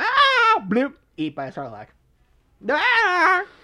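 very high-pitched voice. Acting out someone being eaten by a sarlacc: very high-pitched voice. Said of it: "I've never heard your voice go that high".

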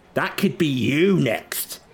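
slow, high-pitched, loud taunting voice.

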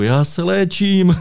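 yelled, very high-pitched. Retelling yelling back at a fellow pilot, retelling shouting back. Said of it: "já na něho řvu".

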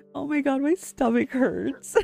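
talking through laughter. Reacting to a joke about a tubby frog, laughing while talking. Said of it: "I'm tearing up also from laughing so hard".

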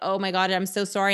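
ordinary delivery

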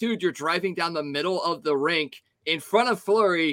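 ordinary talk, nothing marked

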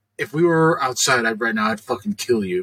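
creepy, low, menacing killer-like voice. Retelling what a shop clerk said to them: imitating a menacing threat. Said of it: "weird serial killer vibes about her".

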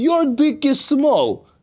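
very high, put-on Russian gangster accent. Speaker tries out a line in a fake Russian accent. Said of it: "i tried to do a russian accent but i sounded like a russian gangster".

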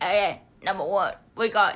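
imitated New York accent. Describing a TikTok New York accent challenge video, in a New York accent. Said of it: "New York accent challenge".

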